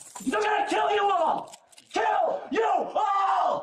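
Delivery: very high, drawn-out, top-of-the-lungs screaming. Threatening to kill everyone, screaming at the top of his lungs. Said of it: "screaming at the top of his lungs".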